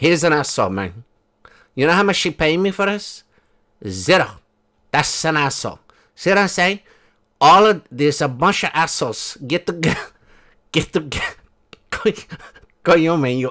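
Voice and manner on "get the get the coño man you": laughing, cracking up while talking. Trying to deliver a line, laughing while talking. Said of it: "I'm making myself laugh".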